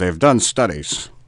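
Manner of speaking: news anchor delivery. Repeating another speaker's catchphrase back at them: mock newscaster voice. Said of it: "It sounded like a newscaster type".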